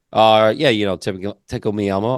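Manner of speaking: put-on casual, offhand, nonchalant voice. Retelling how a toy maker casually named his top toy: imitating Matt's nonchalant reply. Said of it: "he just throws down nonchalantly".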